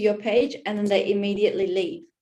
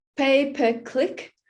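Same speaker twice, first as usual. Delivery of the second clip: slow, pitched-up, careful enunciation, each word spaced out; 5 semitones higher than usual. Explaining ad metrics, saying the term really slowly. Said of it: "I have to say that one really slowly".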